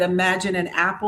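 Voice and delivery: ordinary talk, nothing marked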